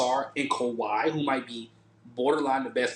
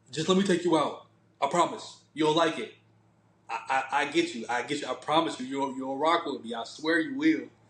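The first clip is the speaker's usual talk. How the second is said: ordinary delivery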